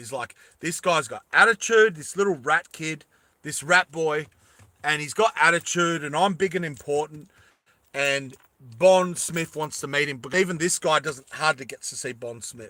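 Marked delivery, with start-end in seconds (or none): none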